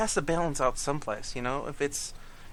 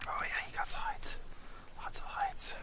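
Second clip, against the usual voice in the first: soft, breathy, barely voiced whisper; 9 dB quieter than usual. While checking hides in a game, the speaker is whispering. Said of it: "Don't know why I'm whispering".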